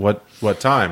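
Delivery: ordinary delivery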